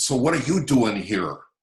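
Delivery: put-on Wigan-accented speech. Retelling meeting a woman near a building, the speaker quotes her in a Wigan accent. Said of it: "so in her Wigan way".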